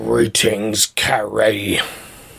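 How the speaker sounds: put-on supervillain voice. Host hands the show over and greets a co-host; Dr. Doom voice. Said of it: "that was my Dr. Doom voice".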